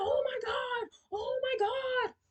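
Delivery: very high, very slow, drawn-out hysterical sobbing. Retelling how a woman talked to the officers, imitating someone hysterical. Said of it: "she's hysterical".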